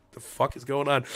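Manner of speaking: ordinary delivery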